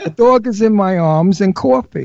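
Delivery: thick, heavily laid-on put-on New York accent. Showing English fans the New York accent they like: heavily put-on New York accent. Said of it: "That's when I really put it on".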